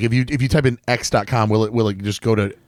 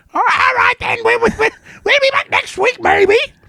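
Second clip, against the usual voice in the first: put-on British puppet pig voice, higher pitch; 3 dB louder than usual. Ending the show jokingly: British Miss Piggy voice. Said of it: "Now you sound like British Miss Piggy".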